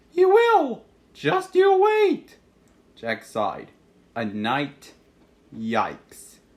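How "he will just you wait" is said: very high-pitched, loud, unnatural voice. Reading a story, a boy princess on the altar calls for rescue: unnaturally high-pitched voice. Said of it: "in an unnaturally high-pitched voice".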